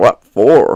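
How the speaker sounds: very deep, low, sullen, sulky growl. A man with a lantern answers a lost traveller's thanks, growling, sulky. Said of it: "he growled sulkily".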